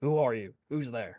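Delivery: quiet, hushed voice. A player voicing their character calls out to a whispering voice, in a hushed tone. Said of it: "in a hushed tone".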